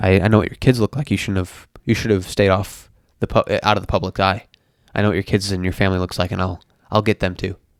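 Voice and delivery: normal talking voice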